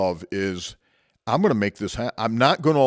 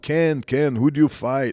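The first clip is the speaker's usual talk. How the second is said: put-on Portuguese accent in English; 2 semitones higher than usual. Retelling what the instructor said after the match: imitating a Portuguese accent. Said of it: "going in his Portuguese accent".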